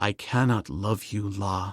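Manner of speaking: very low, hushed, soft-spoken voice. Narrator reading Tarzan speaking to La; low voice. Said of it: "said Tarzan in a low voice".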